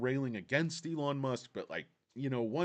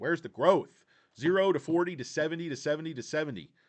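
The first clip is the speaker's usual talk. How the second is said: ordinary talk, nothing marked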